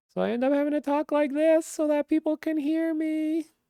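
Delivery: pitch pushed way up. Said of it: "raise the pitch of my voice a lot".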